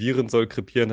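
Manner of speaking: plain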